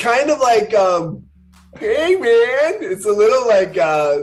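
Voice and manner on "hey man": laid-back slacker voice, higher pitch. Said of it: "the dude".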